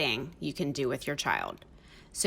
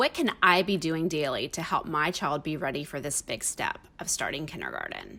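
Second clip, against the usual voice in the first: normal talking voice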